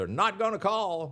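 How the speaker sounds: very high, loud, heckling shout. Recalling fans on a set recognizing the speaker, imitating a fan yelling. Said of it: "Then another one yells".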